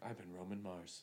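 hushed, very quiet, soft voice. Signing off at the end of the podcast: Roman Mars impression. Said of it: "That was a pretty good impression".

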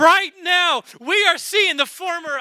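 high, fired-up, excited preaching voice. Speaking to listeners about revival, the speaker breaks into excited yelling. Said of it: "I'm yelling at you because I'm excited".

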